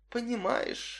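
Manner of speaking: soft, breathy near-whisper. She answers a man who claims not to understand her: almost a whisper. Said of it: "отозвалась она почти шепотом".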